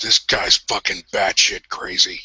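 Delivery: hushed whispering voice. Leaning down to whisper in a companion's ear: whispering. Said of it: "lean down and whisper in Jack's ear".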